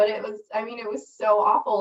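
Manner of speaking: emotional, moved voice welling up mid-sentence. Describing months of painful physical therapy, getting emotional. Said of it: "I get emotional just talking about it".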